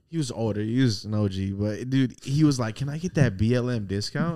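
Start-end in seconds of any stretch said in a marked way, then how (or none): none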